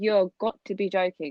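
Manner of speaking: normal talking voice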